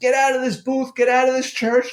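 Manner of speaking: shrieking, very high-pitched, furious scream. Retelling a priest ordering him out of the confession booth: imitating a priest screaming. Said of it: "now he's screaming".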